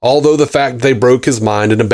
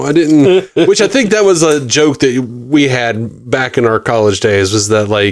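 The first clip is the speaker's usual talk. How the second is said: ordinary talk, nothing marked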